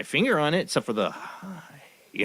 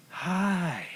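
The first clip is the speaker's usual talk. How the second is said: odd, creepy, high, drawn-out "hi"; 6 semitones higher, 4 dB quieter than usual. Retelling a couple's visit at the door, imitating their odd way of talking. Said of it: "they talk like this and look at me".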